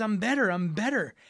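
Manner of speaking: acted thrilled, eager voice bursting with excitement. Retelling a patient's good news in a grocery store: imitating an excited patient. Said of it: "really, really excited about this".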